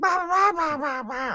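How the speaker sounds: high, loud mock scream. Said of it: "cup your hands around your mouth and scream".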